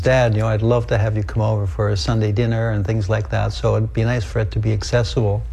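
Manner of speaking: ordinary talk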